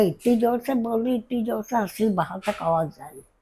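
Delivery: plain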